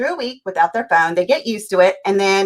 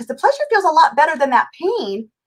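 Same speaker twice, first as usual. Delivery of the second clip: high, raised yelling. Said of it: "so I'm yelling at the T V".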